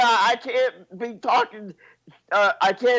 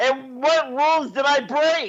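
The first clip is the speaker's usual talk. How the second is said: loud yelling, shouting; 3 semitones higher than usual. Arguing over which rules were broken, yelling. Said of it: "there's no need to yell".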